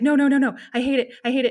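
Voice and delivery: mock frantic, terrified, high, loud panicked cries. Describing a girl screaming on a zip line, imitating a panicking girl. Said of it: "Then she's like".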